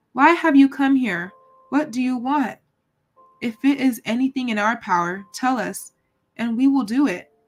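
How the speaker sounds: trembling, quavering voice, wavering all through. Narrator reading a castle dweller calling down to a cat: trembling voice. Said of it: "said in a trembling voice".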